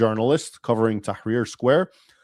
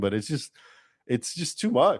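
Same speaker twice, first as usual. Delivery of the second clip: words spoken through laughter; 2 semitones higher, 7 dB quieter than usual. Reacting to a quoted account just read out, laughing while talking. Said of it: "I'm sorry I'm laughing".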